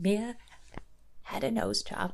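soft, little, squeaky voice. Recapping a woman's tearful story about her daughter, a host imitates the woman's voice. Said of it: "She does have like a squeakiness to her voice".

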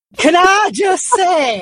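put-on Mancunian accent. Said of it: "most fabulous Mancunian twang".

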